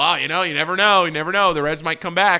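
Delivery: playful ribbing tone. Recalling jokingly telling people at a Reds game, retelling a joking tease. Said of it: "I'm jokingly telling all these people".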